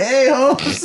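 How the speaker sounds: casual put-on Mexican accent. Retelling greeting someone who walked into the room: mexican accent. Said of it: "I love doing Mexican accents".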